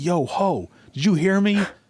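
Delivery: very high, drawn-out holler. Retelling a man yelling at his wife from his front yard, retelling a man's yell. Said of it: "he's yelling from his front yard".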